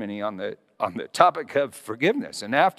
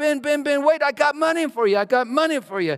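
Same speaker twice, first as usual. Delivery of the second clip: put-on shrill, very high, frantic yelling; 12 semitones higher, 4 dB louder than usual. Retelling a woman running after the milkman: imitating a woman yelling. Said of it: "She was yelling".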